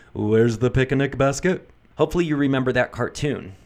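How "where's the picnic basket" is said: voice dropping into a low, throaty sound. Speaker giving audio tips demonstrates a lower throat voice, Yogi Bear voice. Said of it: "And by that I mean Yogi Bear".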